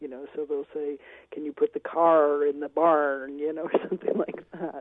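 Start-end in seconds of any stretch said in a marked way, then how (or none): 1.3-3.4 slow American accent, R's hammered hard, overdone. Describing how outsiders try an american accent, exaggerated american accent with hard r's. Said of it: "they tend to hit the R's way too hard".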